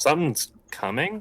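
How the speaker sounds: high-pitched, sort of puzzled voice. Answering the game master's warning in character: questioning tone. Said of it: "sort of questioning".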